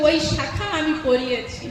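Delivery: ordinary delivery, nothing marked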